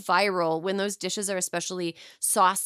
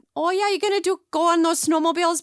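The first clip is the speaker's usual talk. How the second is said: put-on high, loud, heavy Minnesota accent. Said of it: "my Minnesota or my Southern accent".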